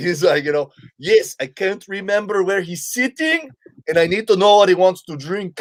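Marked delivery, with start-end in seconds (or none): 1.0-5.6 put-on heavy, thick Caribbean accent, pitched up. Telling a story, the speaker quotes a guy asking for help, in a thick Caribbean accent. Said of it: "this thick Caribbean accent".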